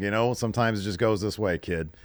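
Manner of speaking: ordinary talk, nothing marked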